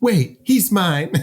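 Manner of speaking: high-pitched Southern belle voice. Retelling a movie scene, doing a character's line: Southern belle voice as Samantha. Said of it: "Why is she like a Southern belle".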